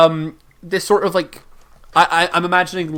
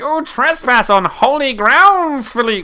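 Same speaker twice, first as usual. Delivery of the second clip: higher-pitched, otherworldly, ghostly spirit voice; 8 semitones higher than usual. Speaker voices the spirit whose chamber the party has entered, in a spirit voice. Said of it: "Tom wanted the voice".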